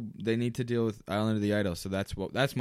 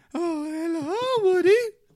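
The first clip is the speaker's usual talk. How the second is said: very high, loud, raised role-play voice; 5 dB louder than usual. Retelling a role play between two players: imitating Bo Peep voice. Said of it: "he's, like, Miss Bo Peep".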